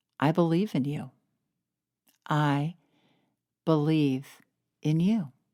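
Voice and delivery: loving, affectionate voice. Guiding listeners in what to say to themselves, in a loving voice. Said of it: "in that loving voice".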